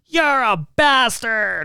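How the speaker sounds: put-on very high, shrill little-old-lady shout. Retelling how an old lady shouted through her car window: imitating an old lady yelling. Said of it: "she's yelling at me through the window".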